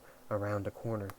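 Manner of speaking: ordinary delivery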